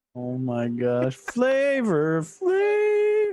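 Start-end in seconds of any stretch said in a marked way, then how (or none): 1.1-3.3 very high, bad sing-song, swooping up, end stretched. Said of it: "That's not a good version of his voice".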